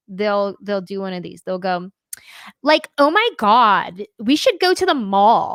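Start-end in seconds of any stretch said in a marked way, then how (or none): 2.6-5.5 exaggerated American valley girl accent, loud and swooping. Showing how people abroad imitate an american accent, valley girl accent. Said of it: "Like they'll do that one".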